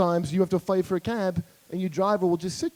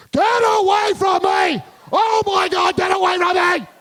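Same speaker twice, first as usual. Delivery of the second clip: very high, frantic, panicked, drawn-out screaming yell; 12 semitones higher, 7 dB louder than usual. Acting out her exact reaction when someone offered to pay: yelling like her. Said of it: "Exactly like that. Like how if you're being sexually attacked, how you're supposed to yell".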